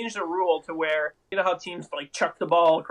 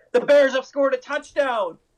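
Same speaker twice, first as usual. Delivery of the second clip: acted, thrilled play-by-play announcer voice, high and loud; 7 semitones higher, 7 dB louder than usual. Retelling the Bears radio announcer's touchdown call: imitating Jeff Joniak sounding excited. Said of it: "actually sounding excited".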